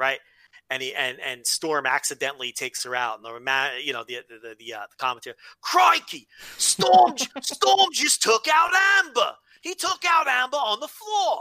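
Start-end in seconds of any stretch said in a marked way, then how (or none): 5.6-11.4 put-on Australian accent, much higher and louder. Retelling a commentator's call of a match, in an Australian accent. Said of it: "How's that for an Australian accent?".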